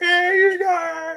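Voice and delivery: pitched way up, calling out. Recalling a Muppets scene where Kermit runs in: Kermit the Frog voice. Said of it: "Kermit the Frog is running and he's like".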